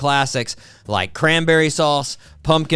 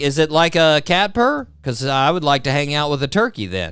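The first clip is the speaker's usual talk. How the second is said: plain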